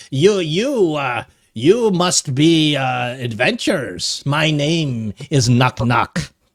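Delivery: small goblin creature voice. Game master voicing a goblin greeting the adventurers, in a Knock Knock goblin voice. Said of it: "so the goblin comes up to you".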